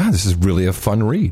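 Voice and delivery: normal talking voice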